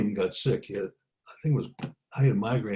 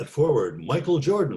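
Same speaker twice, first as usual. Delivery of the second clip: arena PA announcer voice, starting-lineup style; 4 semitones higher, 3 dB louder than usual. Retelling his public address announcing at a college preseason game, best announcer voice. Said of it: "my best announcer voice".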